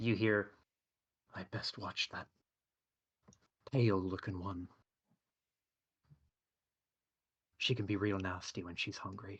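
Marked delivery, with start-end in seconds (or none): 1.3-9.4 close stage half-whisper, right at the ear. Voicing an unseen speaker who half-whispers in a player's ear: very quiet half-whisper. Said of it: "as if someone had just whispered very, very quietly".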